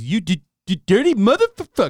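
very high, loud, squeaky cartoon kid voice. Retelling a South Park scene, the speaker quotes Jimmy in his iconic voice. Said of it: "Jimmy in his iconic voice".

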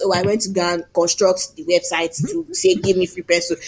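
normal talking voice

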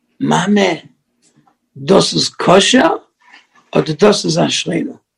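put-on child's whispering voice. Telling a joke about a child asking the mother about candy, imitating a child's whisper. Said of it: "the kid whispers to the mother".

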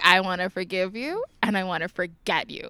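normal talking voice

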